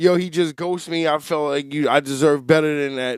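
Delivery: ordinary delivery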